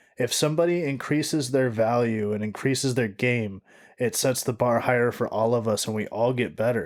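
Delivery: plain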